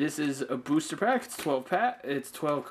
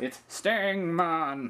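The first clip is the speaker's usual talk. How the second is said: exaggerated, over-the-top kids' cartoon voice; 3 semitones higher than usual. Listing creatures, the speaker copies how a tv show says a name: over-the-top cartoony voice. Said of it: "give the over-the-top cartoony voice".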